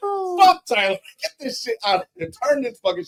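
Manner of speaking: put-on very high, hot-headed furious ranting yelling. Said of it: "Bro, I was hot".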